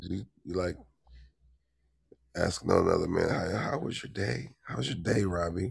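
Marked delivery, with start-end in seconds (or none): 3.3-5.7 soft, exaggeratedly courteous, overly polite. Mocking the polite way someone asks another man: imitating an overly polite greeting. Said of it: "Steele said it's called being polite".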